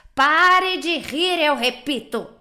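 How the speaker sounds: threatening voice with a menacing edge. Reading a story aloud, Gepeto repeats his order to the laughing mouth with a menacing shout. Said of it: "Gritou então com voz ameaçadora".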